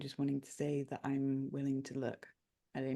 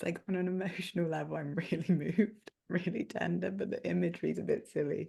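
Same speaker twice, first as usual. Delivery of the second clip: loud, giggling, laughing through the words; 4 semitones higher, 5 dB louder than usual. Describing emotional imagery that feels silly, laughing while talking. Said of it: "sorry for laughing".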